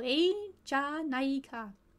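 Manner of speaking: deliberately slow, sounded out. Speaker pronouncing an unfamiliar foreign term for listeners, said very slowly. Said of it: "I'm going to say it very slow".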